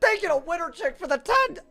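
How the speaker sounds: voice cracking and breaking at a very high pitch. Thanking someone for the ten, voice cracking. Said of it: "That was a voice crack times a billion".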